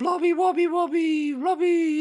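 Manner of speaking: daft, very high, slow, loud, drawn-out voice. Imitating a costume character who kept saying his catchphrase: imitating Mister Blobby's crazy voice. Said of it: "in this, like, crazy voice".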